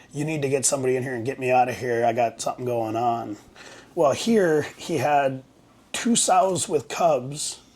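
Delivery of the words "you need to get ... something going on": mock badly rattled, fast, hurried, urgent tone. Retelling a friend's urgent phone call: imitating a very shaken voice. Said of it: "a very shaken voice stating".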